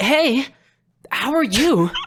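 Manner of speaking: very high, loud meme weeb voice, anime-fan style. Retelling a guy overheard at a convention, in a Deku-style weeb voice. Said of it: "he sounded exactly like the memes where it's like the the the weeb guys".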